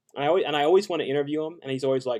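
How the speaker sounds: usual speaking voice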